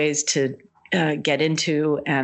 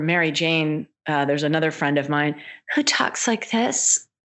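plain

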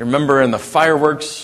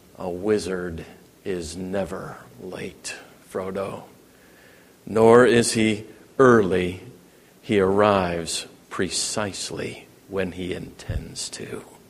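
grave, deliberate delivery, weighing each word; 8 semitones lower, 7 dB quieter than usual. Narrator retells Gandalf answering Frodo, grave, deliberate Gandalf voice. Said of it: "peers gravely at Frodo and deliberately replies".

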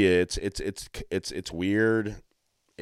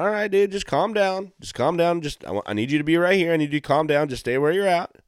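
put-on very chill cop voice, sometimes higher; 9 semitones higher, 4 dB louder than usual. Retelling how a cop talked to an erratic man who couldn't stop moving, imitating a chill cop. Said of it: "the cop's being real chill".

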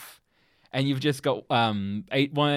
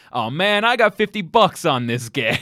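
put-on American accent, higher, louder, slower; 5 semitones higher, 8 dB louder than usual. Retelling what the security guard says while watching a game, in a put-on american accent. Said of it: "he's putting on his American accent and he's like".

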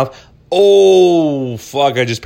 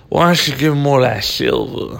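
put-on speech, slightly slurred words. Retelling what a woman said to him, imitating her slurring her words a little. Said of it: "And she's slurring her words a little bit".

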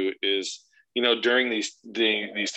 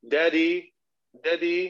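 put-on high-pitched little boy's British lilt; 8 semitones higher than usual. Parent imitates their young son; imitating son's british accent. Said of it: "my son totally did".

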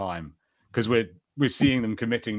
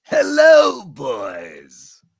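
booming, swooping put-on voice; 6 semitones higher, 10 dB louder than usual. When asked to do a Joker voice: Joker voice. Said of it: "That's my best Joker".

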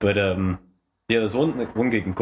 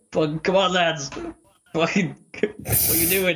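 put-on boozy, high, drunken shout; 8 semitones higher than usual. Retelling a gig where the mother in the crowd shouted: imitating a drunk mother shouting. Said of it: "my ma in the crowd, like, drunk, shouted".

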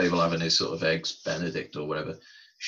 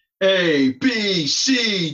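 put-on wise guy voice, higher and louder; 13 semitones higher, 10 dB louder than usual. Quoting a movie line in a Goodfellas wise guy voice. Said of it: "you sounded like a wise guy from Goodfellas".

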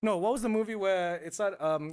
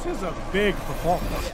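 usual speaking voice

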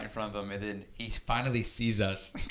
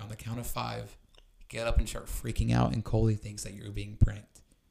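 put-on whispered voice. Retelling how a friend whispered a prank plan: imitating someone whispering. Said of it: "whispers in my ear".

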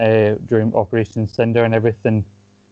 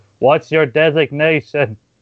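put-on raised voice; 5 semitones higher than usual. Retelling how a man repeated a question to someone said not to hear well: retelling a raised-voice question. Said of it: "just raises his voice like".

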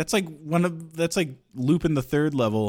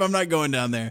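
ordinary talk, nothing marked

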